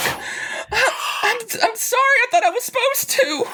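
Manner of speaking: very high-pitched, very slow sobbing voice. The narrator voices Cody kneeling down and apologizing, crying. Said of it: "kneel down and start crying".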